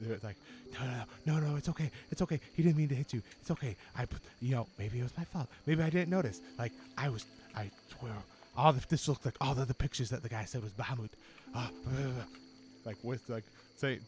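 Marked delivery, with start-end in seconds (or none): 0.7-12.2 muttering in a whisper. Voicing a character huddled in a dark caravan: whispering to himself. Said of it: "you hear him, like, whispering".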